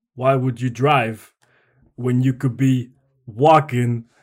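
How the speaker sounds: very loud, booming, slow, deliberate delivery. Answering a request for an impression: Christopher Walken impression. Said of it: "do you wanna give us a Christopher Walken impression?".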